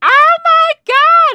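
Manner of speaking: very high, loud shriek of excitement. Retelling hanging up the phone after surprising news: retelling a scream. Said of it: "I was screaming like".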